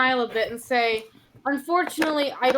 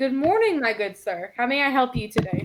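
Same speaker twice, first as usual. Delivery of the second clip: sunny, polite, bright, cheery tone. She greets a man looking for tea, smiling brightly. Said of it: "smile brightly and say".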